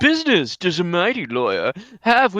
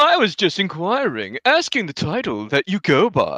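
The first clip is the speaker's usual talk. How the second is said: smarmy, smug, oily, self-satisfied put-on voice. Voicing a game character greeting the player: smarmy character voice. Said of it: "make it more smarmy".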